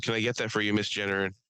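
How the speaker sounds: usual speaking voice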